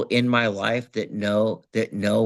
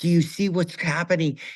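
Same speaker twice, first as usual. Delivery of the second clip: put-on screaming, pitched high; 8 semitones higher than usual. Retelling a near head-on crash in the car, imitating own screaming. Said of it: "screaming at Laura".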